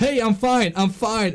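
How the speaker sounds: put-on drunken talking. Retelling own words after falling at the bowling alley: imitating drunken speech. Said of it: "I drunkenly was like".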